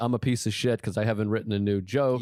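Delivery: ordinary talk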